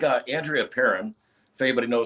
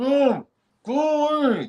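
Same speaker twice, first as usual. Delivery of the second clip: very high, muffled mumble with the mouth closed; 14 semitones higher than usual. Recounting being terrified and unable to open their mouth, imitating Tin Man mumble. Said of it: "I can't open my mouth".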